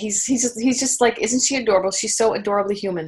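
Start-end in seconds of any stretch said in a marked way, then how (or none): none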